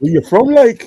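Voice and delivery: very high, loud, clumsy bad Newcastle accent attempt. Retelling a chat with Newcastle fans, quoting them in an attempted Newcastle accent. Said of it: "I can't do a Newcastle accent".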